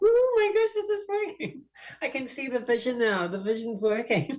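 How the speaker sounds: thrilled, excited squeal.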